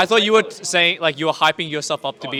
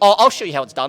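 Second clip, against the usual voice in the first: mock, put-on nerdy voice. Speaker retells what Tom said during a matchup discussion, nerdy voice imitating Tom. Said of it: "Former nerd voice right now".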